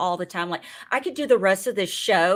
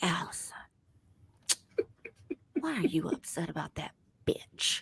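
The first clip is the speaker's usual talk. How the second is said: hushed, calm, soothing near-whisper; 12 dB quieter than usual. The speaker imagines Phaedra giving them a pep talk: calm Phaedra impression. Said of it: "in that calm voice".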